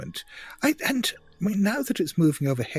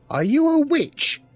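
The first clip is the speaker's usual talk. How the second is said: put-on very high, raised elderly woman's voice; 13 semitones higher, 7 dB louder than usual. Narrating a figure on the porch calling out, in an old woman's voice. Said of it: "this old woman's voice just saying".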